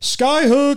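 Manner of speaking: high-pitched, loud shouted call. Retelling a player's shout during a shot: imitating someone yelling. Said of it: "he yells".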